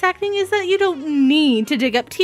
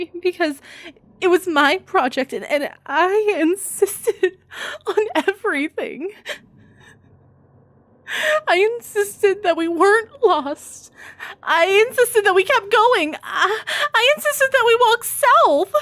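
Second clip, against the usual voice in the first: fake, acted crying; 3 semitones higher than usual. Showing how to sound like you're crying in a tearful monologue: acted crying. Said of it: "let me perform a small monologue from the Blair Witch Project".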